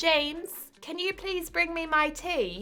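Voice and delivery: very high-pitched, put-on British accent. Asked whether they can do a british accent, the speaker tries one: british accent. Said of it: "Is that a good British accent?".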